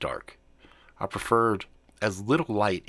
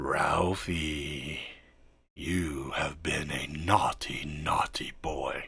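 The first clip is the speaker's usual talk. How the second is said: eerie, unsettling, slow creepy voice; 5 semitones lower, 4 dB quieter than usual. Reading a story, voicing an unseen voice in the house: creepy voice. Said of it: "says the creepy fucking voice".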